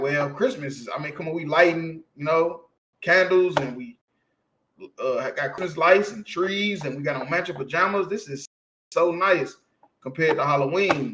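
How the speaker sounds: ordinary talk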